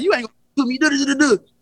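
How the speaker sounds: put-on blustery trash talk. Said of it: "I be rah, rah".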